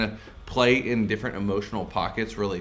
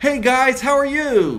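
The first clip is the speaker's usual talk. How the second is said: very high, raised, put-on nice tone; 9 dB louder than usual. Showing how people pitch up when they want to be nice: pitched up to sound nice. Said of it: "we pitch up when we want to be nice".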